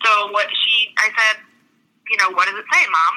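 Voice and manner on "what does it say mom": icy, cold, stern, no-nonsense tone. Retelling questioning a mother about test results: retelling a cold stern question. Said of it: "I was very cold, very stern".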